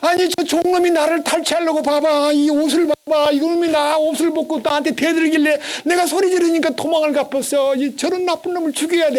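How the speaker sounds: put-on shrill wailing shout through sobs, high. Retelling how the master's wife accused the servant, imitating a woman shouting while crying. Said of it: "하고 막 소리 지르고 남편 올 때까지 울고".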